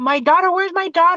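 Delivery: put-on panicked, desperate, frantic mother's scream. Recounting the mother coming toward the speaker, retelling a mother's screaming. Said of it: "here comes the mother screaming towards me".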